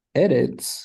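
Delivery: eretz said with its exceptional stress placement.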